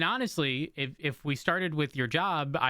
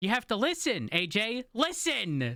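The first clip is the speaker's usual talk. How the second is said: slow yelling with a raised pitch; 7 semitones higher than usual. Telling the other speaker to listen after they missed a name: yelling. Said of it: "Are you yelling at me right now?".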